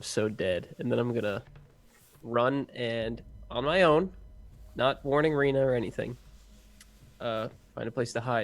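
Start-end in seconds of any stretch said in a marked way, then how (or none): 0.0-0.8 quiet muttering under breath. Speaking in character after three guards spot them: muttered under breath. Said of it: "under my breath".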